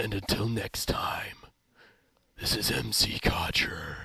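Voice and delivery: hushed, breathy, whispered caped-hero voice. A YouTuber signing off his video in a Batman voice. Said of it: "I'm going into Batman voice for this".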